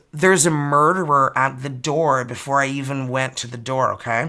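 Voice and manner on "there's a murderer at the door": usual speaking voice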